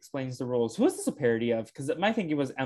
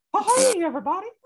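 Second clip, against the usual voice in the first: put-on high cartoon mouse voice; 5 dB louder than usual. Jumping in after another speaker mentions a Mickey Mouse voice: Mickey Mouse voice. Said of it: "I was doing a pretty good Mickey Mouse voice".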